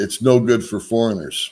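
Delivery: ordinary delivery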